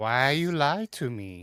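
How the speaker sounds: sad, sorrowful owl-creature voice. Voicing an owlkin who accuses the players of lying: sad owlkin voice. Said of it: "Never heard him so sad".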